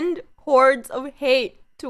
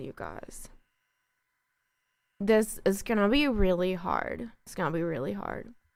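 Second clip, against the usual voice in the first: voice close to crying, fighting back tears; 4 semitones lower, 9 dB quieter than usual. Sharing news of a death with viewers, holding back tears. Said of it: "I'm really gonna try not to cry".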